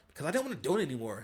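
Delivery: curt, dismissive voice with a bit of attitude. Retelling an ex's answer to a question, imitating her answer with attitude. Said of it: "kinda said it with a little bit of an attitude".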